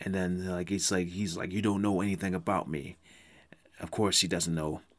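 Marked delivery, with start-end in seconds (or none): 1.5-3.0 imitated snippy manner. Retelling a film scene where Orlando gets snippy: imitating Orlando's snippy reply.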